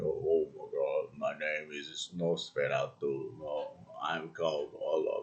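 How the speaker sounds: put-on voice dropped deep and low. Imitating the movie character Count Orlok: Count Orlok deep voice. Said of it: "deep voice, like".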